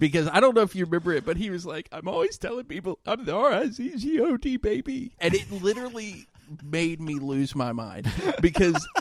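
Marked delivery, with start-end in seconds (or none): 1.9-5.1 put-on crying voice, much higher. Retelling a moment that made the speaker laugh, imitating Rizzo crying. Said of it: "he's just crying".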